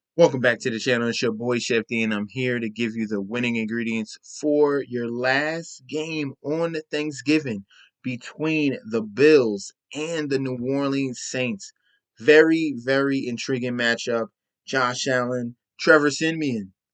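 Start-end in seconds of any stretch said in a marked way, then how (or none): none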